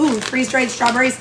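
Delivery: ordinary talk, nothing marked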